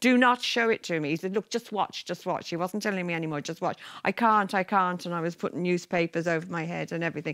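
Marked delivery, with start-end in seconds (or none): 0.0-1.1 put-on high-pitched screaming. Retelling screaming at the man who brought the film home, re-enacted scream. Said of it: "I was screaming at him".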